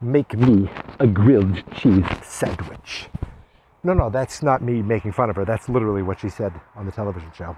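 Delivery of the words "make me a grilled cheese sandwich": unhurried, deliberate drawling delivery. Recapping the show, the host imitates how Fish Mooney likes to talk slow. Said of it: "she likes to talk slow like this".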